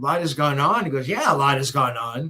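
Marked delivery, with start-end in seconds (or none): 1.1-2.3 put-on, heavy, very sarcastic delivery. Retelling how an interviewee answered on a phone interview: mimicking a sarcastic reply. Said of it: "very sarcastically".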